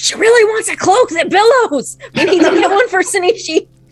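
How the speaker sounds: very high-pitched, failed stage whisper. Grelda sprints to find Tarnin, trying to be sneaky, in Grelda's horrible not-whisper. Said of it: "in that horrible not whisper that she has".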